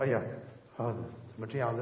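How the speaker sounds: normal talking voice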